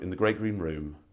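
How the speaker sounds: downward, falling pitch ending on "room". Showing how they would read a child a bedtime story: pitch falls on 'room'. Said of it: "downward tonality, ... where I go down at the end of each line".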